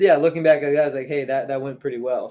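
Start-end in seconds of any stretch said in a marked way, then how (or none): none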